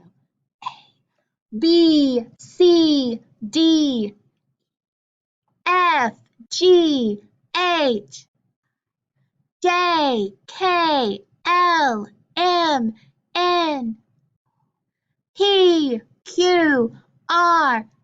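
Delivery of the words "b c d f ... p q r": loud and proud, much higher. Leading an alphabet warm-up, saying each consonant loud and proud. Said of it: "you're going to say it loud and proud".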